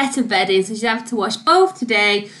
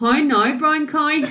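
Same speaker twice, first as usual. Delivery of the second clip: practised, put-on Northern Irish accent; 3 semitones higher than usual. Asked by the other speaker to do it, the speaker tries a practised Northern Irish accent. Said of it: "I really perfected".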